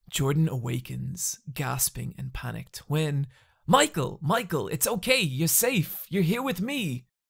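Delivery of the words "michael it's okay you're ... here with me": high, swooping, sing-song, comforting cartoon voice. Comforting a man who woke panicked from a dream; Bugs Bunny voice. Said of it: "It is [name]".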